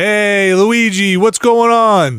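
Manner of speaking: put-on Brooklyn accent. Guessing how the Luigi voice will be done: Chris Pratt with Brooklyn accent. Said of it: "I think you just do Brooklyn".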